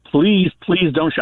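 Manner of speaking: high, pleading, begging voice. Recounting reaching into the car console for a wallet, retelling own begging. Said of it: "I was begging".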